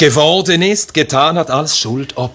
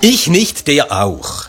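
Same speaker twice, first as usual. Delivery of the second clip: mock-ironic tone, slower delivery. Retelling how a teacher commented on children's excuses, retelling an ironic remark. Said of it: "so hat das so ironisch kommentiert".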